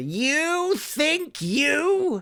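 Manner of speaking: very high, squeaky goblin-like creature voice. Showing the phrase used to find the goblin voice: goblin voice. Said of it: "that was just to help me get that voice".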